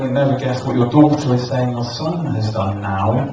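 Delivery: plain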